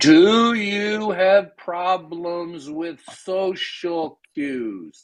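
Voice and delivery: every word drawn out, very slow and deliberate. Repeating a question to someone, slow and deliberate. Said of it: "I'll say it slowly".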